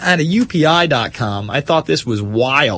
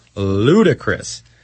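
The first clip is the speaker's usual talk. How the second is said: slow, deliberate, drawn-out scorn. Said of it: "I'm talking slow because this whole thing sounds ludicrous".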